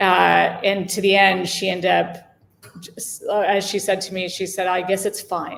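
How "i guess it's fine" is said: clipped, put-on European accent. Retelling a woman's verdict after forty-eight hours of repainting, in her european accent. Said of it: "in her European accent".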